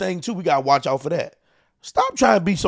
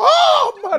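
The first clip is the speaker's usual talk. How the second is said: tearful cry, higher and louder; 4 dB louder than usual. Retelling how the mother started crying: imitating someone crying. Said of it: "She started crying".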